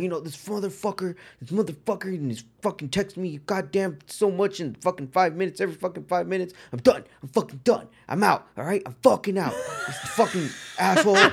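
put-on, high-pitched ranting tirade, one curse after another. Retelling a phone call where the dad goes into a rant: imitating someone ranting. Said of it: "he just goes into a rant".

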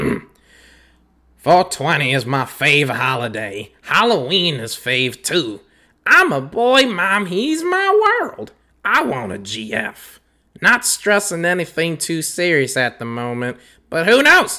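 animated, high, swooping, bouncy sing-song cartoon character voice. Reading a profile bio aloud as one of several voices, in a Cleveland cartoon voice. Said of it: "Let's try Cleveland".

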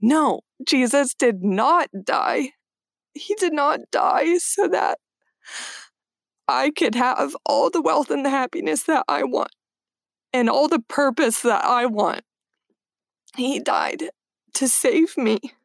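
high, cracking voice, close to tears, holding back.

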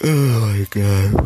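loud, high-pitched words spoken mid-yawn. Speaker greeting the audience, speaking through a yawn. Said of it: "Please forgive me for yawning".

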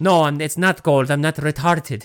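put-on very thick Spanish accent. Retelling what a man told him, in a heavy Spanish accent. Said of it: "with his very heavy Spanish accent".

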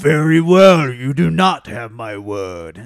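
deep, booming, very slow, drawn-out delivery. Speaker acts out a movie scene after somebody hits Chris Hemsworth, in a deep Chris Hemsworth voice. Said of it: "he goes so deep in some scenes".

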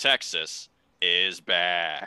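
loud, proud, declaiming tone. Predicting a matchup winner, doing his best Stugotz impression. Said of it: "my best Stugotz impression when I say that".

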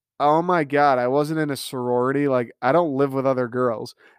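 ordinary talk, nothing marked

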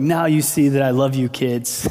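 jokey, playful delivery. Telling how dad got stung holding a wasp, the speaker is retelling dad's joking line. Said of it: "jokingly was like".

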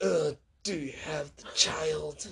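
slow, soft, creepy, raspy voice.

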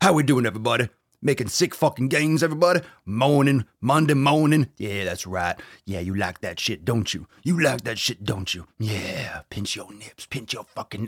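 strong, burly big-man put-on voice. Streamer greeting everybody on a monday morning: big strong burly man voice.

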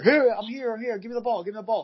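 shouting. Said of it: "he yells at the player".

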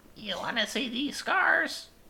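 menacing, grandma-like put-on voice. After saying they'd play a good Penguin, trying out the voice: Penguin voice, menacing grandma-like. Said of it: "that sounded like a menacing grandma".

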